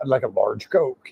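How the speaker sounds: monster truck rally announcer style voice. Describing a longtime friend, the monster truck voice guy, and how he talks: imitating Bob. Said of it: "That's just how Bob talks".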